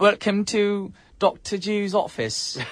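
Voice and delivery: put-on British accent. Playing a doctor greeting a patient: put-on British accent. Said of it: "just because I'm a doctor, I have an accent now".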